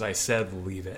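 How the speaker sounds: plain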